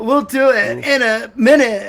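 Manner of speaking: very high, loud, distressed, whiny crying wail. Joking about doing voices: imitating Romeo's distressed voice. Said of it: "the Romeo's distressed voice".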